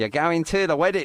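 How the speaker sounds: put-on failed Manchester accent drifting into Australian. Acting out a quote about going to a wedding: attempted Mancunian accent. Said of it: "I can't do a Mancunian accent".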